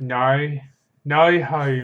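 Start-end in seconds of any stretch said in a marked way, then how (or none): 1.0-1.8 imitated Australian accent. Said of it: "Their O's are so weird".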